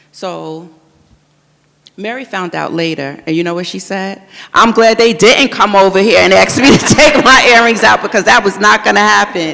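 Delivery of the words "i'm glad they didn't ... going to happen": very loud, raised, pitched-up voice. Speaker quoting what Mary said after finding out, in a loud voice. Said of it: "[IN A LOUD VOICE. AUDIENCE LAUGHS]".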